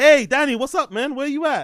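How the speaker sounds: happy, bright, high-pitched and loud delivery. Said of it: "like in his booty call voice".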